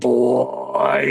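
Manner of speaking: put-on "boy" stretched out, creaky, rough and menacing. Describing a horror character who creeps people out: the Tall Man's menacing voice. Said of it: "just his menacing, like, voice where he's like".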